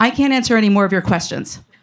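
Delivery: put-on strict, stern, shut-down tone. Retelling a conversation about a blood test: imitating a stern tone. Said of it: "Real stern with me".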